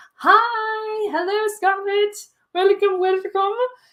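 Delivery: very high squealing creature voice, drawn-out hi. Speaker greeting Scarlett in a Pee Wee Herman creature voice. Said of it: "I don't know what that voice was".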